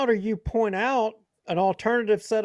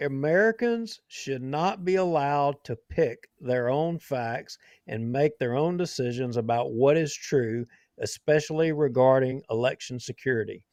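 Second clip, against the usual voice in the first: low, slow, deliberate emphatic reading. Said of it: "I wanna read that sentence again slowly".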